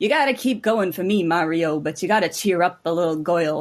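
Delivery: put-on Brooklyn accent character voice. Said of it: "everybody sounds like, like, a Brooklyn".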